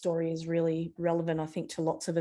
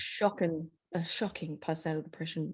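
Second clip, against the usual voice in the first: hushed, half-whispered aside; 4 dB quieter than usual. Speaking while the speaker's children are nearby, half-whispering. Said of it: "which I'm kind of whispering because they're here".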